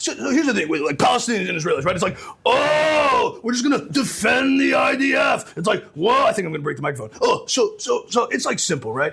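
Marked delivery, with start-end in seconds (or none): 2.5-5.6 mock sarcastic scream, high, very slow, drawn out. Imitating a man who just sort of screams sarcastically: mock-sarcastic screaming. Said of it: "he just sort of screams sarcastically".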